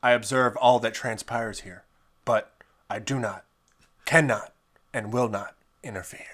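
put-on narrator voice. Asked for their best Watcher impression, a speaker does the Watcher impression. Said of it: "I have to do my best impression of a watcher".

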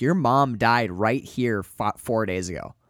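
plain

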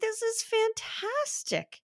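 high, slow delighted gushing.

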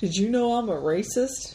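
ordinary talk, nothing marked

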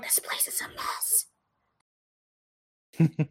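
barely audible, hushed, breathy whisper. Speaking to a companion about the place they are in; whispering. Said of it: "I'm like whispering".

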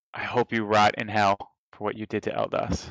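hushed whisper. A player's character whispers to an enemy during a tabletop game, whispering. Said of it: "I whisper".

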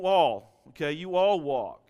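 loud American Southern accent on you all. A preacher explains how to read a word in scripture, southern accent. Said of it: "we got to read it with a southern accent".

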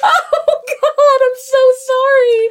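very high, loud, drawn-out speech through laughter. Apologizing for reacting to a painful story, laughing while talking. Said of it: "I'm sorry, I'm laughing".

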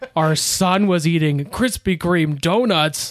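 put-on shocked voice, mock surprise. Recounting his parents' reaction to a story about him, imitating shocked parents. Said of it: "This is an impression of my parents".

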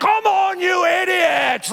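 very high, rasping, rough, drawn-out scream. Retelling watching a football game at a party: retelling screaming at the tv. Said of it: "I'm screaming at the T V".

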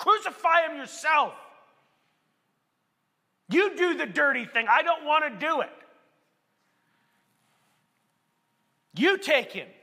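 mock scrambling, frustrated, exasperated delivery. Retelling the Passion, voicing Pilate's reply to the chief priests, mock-frustrated. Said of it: "He's frustrated right now".

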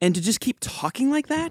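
tune lifting at the end on talking. Explaining how people try to sound less threatening, rising uptalk inflection. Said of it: "raise the inflection of your voice like this".

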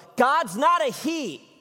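mock very high, drawn-out, furious shouted yell. Retelling how someone in the audience interrupted the preacher: imitating an angry yell. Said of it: "And he yelled".

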